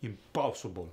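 put-on Russian accent. Showing how a Russian accent changes a vowel mid-word, Russian accent. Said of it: "Like if I say impossible".

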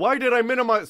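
sudden, very loud, high-pitched yell. Speaker accidentally minimizes a window, yelling into the microphone. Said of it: "I didn't mean to yell microphone".

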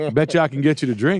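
high-pitched, challenging, daring tone. Joking about Michael Jordan offering drinks: Michael Jordan impression. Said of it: "That's my impression of Michael Jordan".

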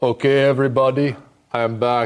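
bad put-on accent that sounds Indian. Returning to the show after a segment, in a bad Arnold Schwarzenegger impression. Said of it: "why do you sound Indian?".

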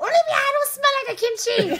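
very high, loud, offended protesting voice. Answering a request to say it in her mom's voice: imitating her mom's voice. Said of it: "What would she say in her voice?".

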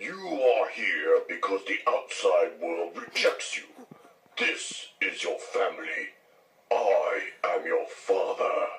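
deep, low cartoon villain voice. Taking a turn at doing impressions, the speaker does a Shredder voice. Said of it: "now I'll do the shredder".

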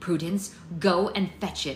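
ordinary talk

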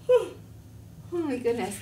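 mid-yawn. As a character who just became a butterfly, yawning. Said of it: "I'm yawning".

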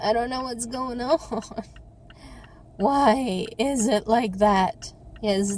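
exasperated, fed-up voice with a crackle. Still waiting after an hour and a half for a forty-minute trip: crackly fed-up voice. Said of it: "this is my fed up voice. I go like all crackly".

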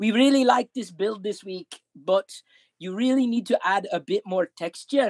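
put-on Scottish accent, badly done. Speaker stands over her as she builds with Lego, LEGO Masters judge impression. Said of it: "with a really bad Scottish accent".

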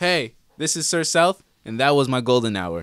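over-friendly, very loud. A guest of the show records a sign-off, acting like everyone's best friend. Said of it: "Let me get in my acting mode".

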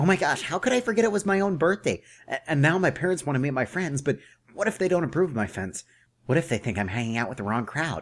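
anxious panicky fretting.

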